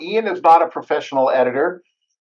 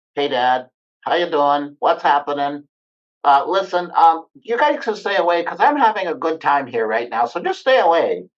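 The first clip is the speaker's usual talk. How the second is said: chatty talking dog voice. Father retelling how his daughter phones him pretending to be Bo, voicing Bo. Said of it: "she will talk like".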